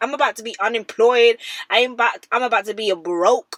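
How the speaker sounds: mock bragging, proud, chest-out boasting tone. Retelling how he says it, imitating him saying it proudly. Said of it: "he's proud of it".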